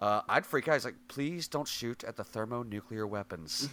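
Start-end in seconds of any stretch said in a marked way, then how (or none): 1.1-3.7 put-on calm, unruffled, even, soft, polite tone. Speaker quotes a man who stayed calm throughout, imitating a calm delivery. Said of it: "he's so calm throughout the entire thing".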